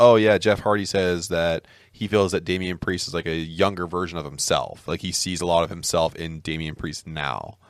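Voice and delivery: ordinary talk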